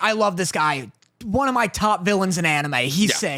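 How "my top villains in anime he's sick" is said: ordinary talk, nothing marked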